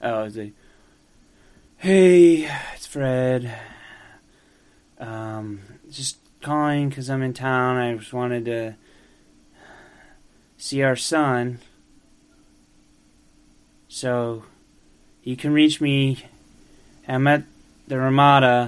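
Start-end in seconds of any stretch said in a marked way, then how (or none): 1.8-18.7 sorrowful, sad tone, lower pitch. Voicing a traveling cranberry salesman leaving a phone message: sad voice. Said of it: "Fred Marple sounds sad".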